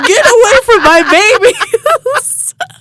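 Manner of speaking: mock very high, stretched-out, drawn-out holler. Retelling a dream, stabbing skeletons with a pitchfork: imitating own yell.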